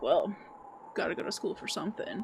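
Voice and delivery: mock smug condescending tone. Retelling a tour guest's reply to a wine expert: imitating a condescending remark. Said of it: "this guy crosses his arms and is like".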